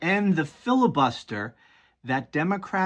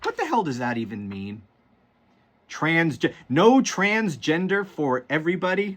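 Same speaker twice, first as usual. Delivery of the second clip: usual speaking voice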